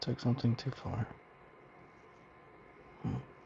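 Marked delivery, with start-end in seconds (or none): 0.0-1.0 soft, fast mutter under the breath. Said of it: "sounds like I'm muttering under my breath".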